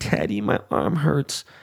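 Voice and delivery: mock whimpering, whiny little child in pain. Father retells his daughter complaining after he swung her by the arms, imitating a whiny hurt child. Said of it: "her arm is in fucking pain".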